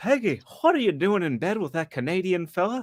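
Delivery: high, swooping, sing-song Texan cartoon drawl, laid on thick. Describing a meme video, the speaker does the Hank Hill voice. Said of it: "I did the voice of Hank".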